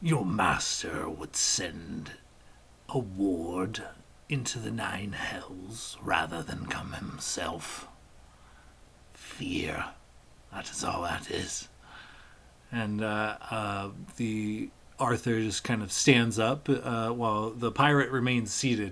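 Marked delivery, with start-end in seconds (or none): 0.0-11.7 low demonic voice, word drawn out. Voicing a demon who retorts to the other figure: demon retorting. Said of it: "The demon kind of retorts".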